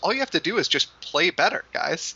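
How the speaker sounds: high, sing-song, mocking voice.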